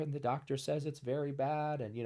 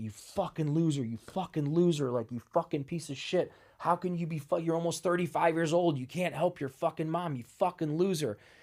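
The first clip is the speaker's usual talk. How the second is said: put-on crying, tearful, self-berating outburst; 2 semitones higher than usual. Retelling berating himself while crying at night: retelling tearful self-berating. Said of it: "And I'm just crying".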